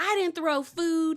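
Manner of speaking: mock frustrated, high-pitched screaming. Retelling a phone call in which a son screams in the background: imitating someone screaming. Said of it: "You hear Luke in the background screaming".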